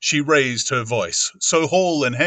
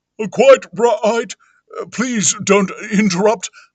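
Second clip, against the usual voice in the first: jerky, halting stop-start delivery with odd intonation; 9 semitones higher, 5 dB louder than usual. Reading a story aloud, the vicar answers from inside: curious jerking intonation. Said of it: "answered with a curious jerking intonation".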